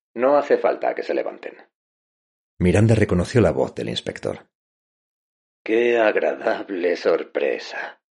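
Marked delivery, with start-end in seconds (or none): 5.6-7.9 husky, hoarse, level, unvaried flat monotone. Narrator reads a character reacting to the inspector's arrival, hoarse monotone voice. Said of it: "dijo Norma con voz ronca y monocorde".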